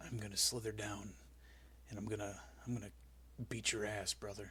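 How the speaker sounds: breathy whisper, sounding like a snake talking. Answering a question about how Jake the Snake talks: Jake the Snake impression. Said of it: "how Jake the Snake talks".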